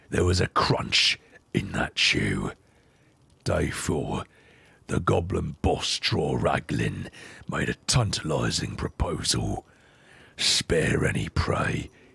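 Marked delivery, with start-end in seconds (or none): 3.4-11.8 gruff, rough, creaky ogre monster voice. Reading a journal passage aloud: in the character's voice. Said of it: "let's try doing it in his voice".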